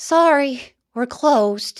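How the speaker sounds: sad and downcast. Narrating a story, voicing Alfie the sidekick from his armchair: Alfie's sad voice. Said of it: "he's very sad".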